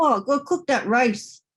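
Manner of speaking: irritated, angry tone. Demonstrating vocal expression number nine on a practice phrase: irritated, angry tone. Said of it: "Irritated. Angry".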